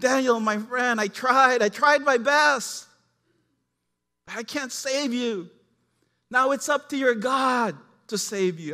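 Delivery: very loud, drawn-out, anguished pleading cry. Retelling the king's words to Daniel, the speaker acts out the king's anguish. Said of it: "you could just hear the anguish in his voice".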